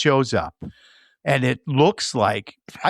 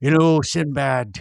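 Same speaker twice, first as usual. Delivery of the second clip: put-on gruff, rough-edged sailor character voice. Imagining the Oracle in Robert Shaw's Jaws voice: Robert Shaw as Quint in Jaws. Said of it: "I'm trying to do Jaws".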